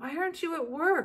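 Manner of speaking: weak, croaking sick voice, pitched very high. Reading a story, a girl in bed asks her mother a question: croaked. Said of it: "croaked Ramona".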